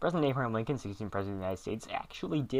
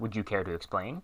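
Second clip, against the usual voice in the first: normal talking voice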